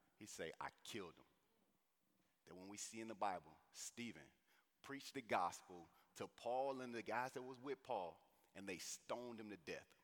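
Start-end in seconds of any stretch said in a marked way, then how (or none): 0.6-1.3 tearful, tear-filled voice. Imagining the Apostle Paul answering about Stephen: imitating Paul in tears. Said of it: "With tears in his eyes".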